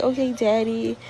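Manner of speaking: mock giggling, giggly put-on voice. Retelling how a woman answers the man who beats her, imitating her giggly reply. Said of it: "She just laugh and giggle".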